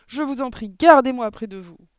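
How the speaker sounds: very loud, high, pleading, begging cry. Mathilda pleads with Mademoiselle Candy; cried out. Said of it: "cria Mathilda".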